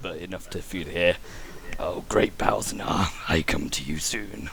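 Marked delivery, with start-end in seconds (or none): 1.8-4.5 muttered under breath, lower and slower. A character speaks a short invocation the others can just hear, almost under his breath. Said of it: "almost under his breath".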